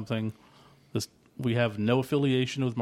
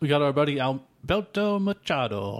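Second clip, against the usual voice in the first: slow, deliberate, drawn-out, put-on Italian accent; 3 semitones higher than usual. Giving a shout-out to a listener by name: put-on Italian accent. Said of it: "Why does he get that accent?".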